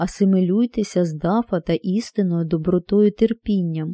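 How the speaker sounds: ordinary delivery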